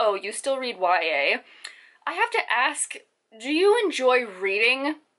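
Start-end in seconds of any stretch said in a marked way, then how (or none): 0.0-1.4 put-on judgmental, disapproving voice. Imitating people who come to the speaker about their reading, mocking a judgmental tone. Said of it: "with that judgmental tone of".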